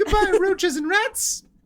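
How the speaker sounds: very high, squeaky, silly cartoon cat voice. Imagining laser-blasting cats, the speaker voices one in a cartoon cat voice. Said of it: "That's a good cat voice".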